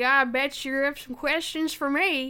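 put-on Texan accent. Retelling a movie's closing line: Henry Cavill with Texan accent. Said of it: "a curly mullet and a Texan accent".

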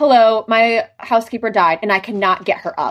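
flat, emotionless, annoyed phone voice. Discussing a woman's call, the speaker quotes her, imitating an annoyed caller. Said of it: "she sounds so annoyed on the call".

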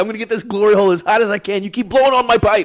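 high-pitched, shrill, very loud, full-volume screaming. Retelling a show scene where a glassblower screams at an understudy: imitating a man screaming. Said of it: "He's like".

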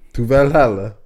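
speaking with a put-on Italian accent. Replying to talk about how the Vikings thought, the speaker uses an Italian accent. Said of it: "They said an Italian accent just like that".

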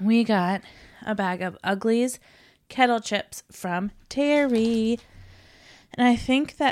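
a little short of breath, winded. Describing a bag of chips after a busy night while getting over being sick: out of breath. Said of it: "I'm a little out of breath".

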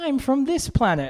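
put-on Gold Coast Australian accent, very high pitch. Imitating child extras in a Thor scene: imitating a Gold Coast accent. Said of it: "you sound like you're from the Gold Coast".

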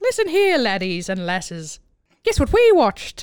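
bad, poor put-on Irish accent. Greeting everybody before saying what they watched, in a bad fake Irish accent. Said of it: "I don't know that is an accurate".

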